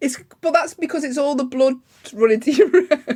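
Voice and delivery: high-pitched voice bubbling with laughter while talking. Explaining to the other speaker why their face goes red, laughing while talking. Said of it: "Sorry, I'm laughing".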